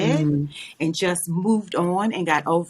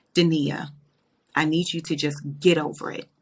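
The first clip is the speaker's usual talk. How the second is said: mock-stern, put-on stern voice. Retelling what her ex-husband's mother told her, imitating a stern voice. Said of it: "she had got very stern".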